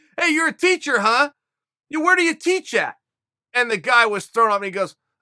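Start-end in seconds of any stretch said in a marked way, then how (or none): 0.2-3.0 high, confrontational, accusing yell. Retelling how a friend yelled at a man in line: imitating someone yelling. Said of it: "Dave starts yelling at the guy".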